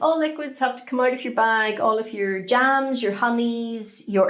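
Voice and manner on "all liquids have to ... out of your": usual speaking voice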